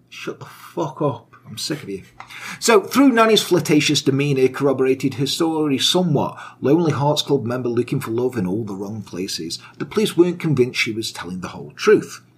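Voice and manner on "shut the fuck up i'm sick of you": exasperated, breathy, near-whispered, fed-up put-down. Imitating the homicide captain answering the prisoner: imitating the fed-up homicide captain. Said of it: "And he's just like".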